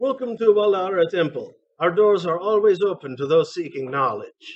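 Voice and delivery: put-on Caribbean accent. Voicing a temple greeter in a game, some sort of caribbean accent. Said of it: "some sort of Caribbean accent that I was doing there".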